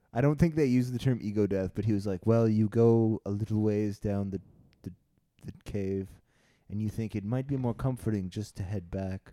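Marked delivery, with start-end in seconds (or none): 2.2-9.3 put-on dry, disdainful tone. Retelling a professor's answer about his trip: imitating a dry, disdainful tone. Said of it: "a very dry, kind of disdainful tone of voice".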